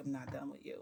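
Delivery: low, hushed half-whisper under the breath. Retelling what a man half-whispered after catching and lifting her, retelling a half-whisper. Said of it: "And then he whispers like".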